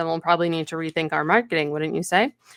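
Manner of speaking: ordinary talk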